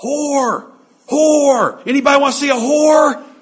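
high, loud, furious yelling.

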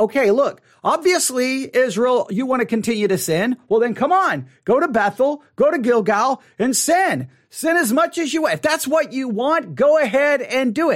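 high, mock, lightly sarcastic tone. Acting out the text's words to Israel about sinning: acting out sarcasm. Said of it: "there may be a little bit of sarcasm here".

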